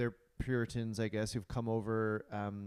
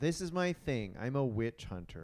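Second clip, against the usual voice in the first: normal talking voice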